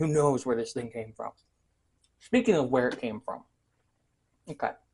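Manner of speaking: speaking mid-chew, food in mouth. Eating an unfamiliar snack while talking, mouth full. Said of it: "Let me finish chewing".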